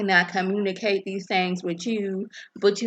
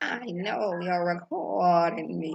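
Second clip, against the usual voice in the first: put-on slow, evil old woman character voice; 3 dB quieter than usual. Speaker retelling what Evil City Grandma said to someone recording her, in Evil City Grandma voice. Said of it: "I'm trying to get my Evil City Grandma voice in".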